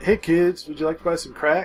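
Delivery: friendly, pleasant tone. Recalling a movie character's plan, the speaker acts him out: imitating Ricky Bobby as nice dealer. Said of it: "like a nice one".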